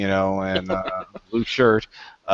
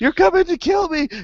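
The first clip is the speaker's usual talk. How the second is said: mock, very high, shrill screaming. Speaker recounting how a character just starts screaming, retelling a scream. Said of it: "He just starts screaming".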